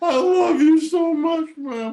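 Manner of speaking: wailing through tears, very high and loud. Retelling a phone call to mom, imitating crying. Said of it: "I start crying".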